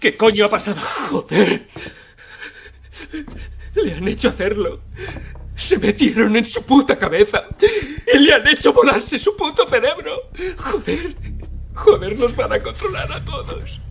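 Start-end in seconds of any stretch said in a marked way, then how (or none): 1.1-13.8 worked-up, frightened, agitated ranting, climbing in pitch. In a game scene after a man is made to kill himself, a companion gets worked up. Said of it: "cálmate".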